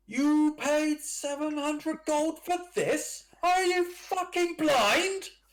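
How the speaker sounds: very high, loud, furious shout. As the players leave, Captain Basalt shouts at tryhard upstairs: Captain Basalt shouting. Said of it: "Captain Basalt shouting at tryhard".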